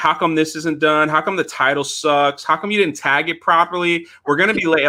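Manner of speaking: high-pitched scolding rant, complaints fired off. Retelling how Jeremy used to complain before live streams: imitating someone yelling. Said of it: "yelling at me".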